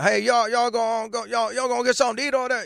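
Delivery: imitated Cajun accent. Imitating a sheriff in Louisiana from a reality show, in a put-on Cajun accent. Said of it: "he was talking Cajun".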